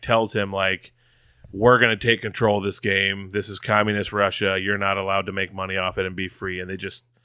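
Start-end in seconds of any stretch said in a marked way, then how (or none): none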